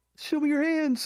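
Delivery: mock shouting. Acting out an officer drawing a gun, acting out a cop screaming.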